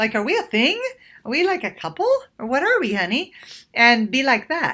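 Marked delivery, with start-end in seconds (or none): 0.2-3.3 light, breezy, playful sing-song teasing. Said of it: "you can make it lighthearted and playful".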